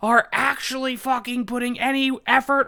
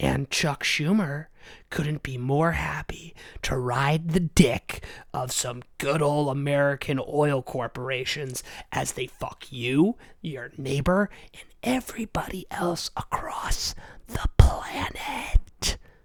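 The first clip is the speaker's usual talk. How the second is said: speaking in a whisper, lower; 9 semitones lower, 4 dB quieter than usual. Ranting about oil corporations and aliens, whispering. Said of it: "I'm done whispering".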